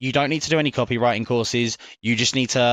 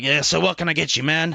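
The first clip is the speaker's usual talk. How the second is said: burly, big, masculine macho bartender voice; 4 semitones higher than usual. Describing a brand's copywriting persona: big masculine bartender voice. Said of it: "a big masculine man".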